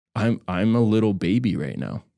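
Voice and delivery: ordinary talk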